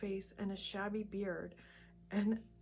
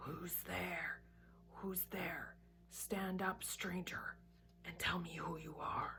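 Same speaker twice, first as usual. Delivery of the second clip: hushed growling voice of a great wolf; 3 semitones lower, 7 dB quieter than usual. A huge wolf rises and challenges the stranger, in a growling voice. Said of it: "said in a growling voice".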